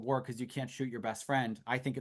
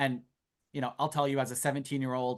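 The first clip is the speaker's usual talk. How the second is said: ordinary talk, nothing marked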